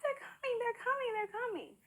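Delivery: very high, super excited squealing.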